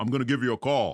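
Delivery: very loud, big, booming voice. Retelling what a man said after getting his number: imitating a big booming voice. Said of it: "He's got this big booming voice".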